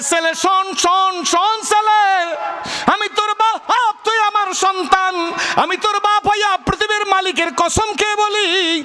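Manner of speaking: passionate high-pitched shout.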